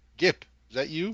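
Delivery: loud, high call-out. Voicing a character calling out while jogging toward a group, yelling. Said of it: "I'll yell like kind of".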